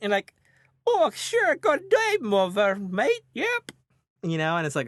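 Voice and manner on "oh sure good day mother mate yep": very high, clumsy put-on European accent. Mocking a californian actor asked to do a european accent, bad fake european accent. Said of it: "can you do a European accent?".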